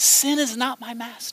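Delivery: soft, hushed whisper barely above breath. Leading a group in repeating a phrase, this time whispering it. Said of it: "this time I want you to whisper it".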